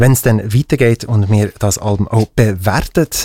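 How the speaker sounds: ordinary talk, nothing marked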